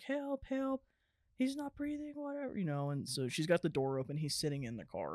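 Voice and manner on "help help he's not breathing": very high-pitched screaming cry. Retelling how a mother screamed for help over her son: imitating someone screaming. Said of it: "screaming and is like".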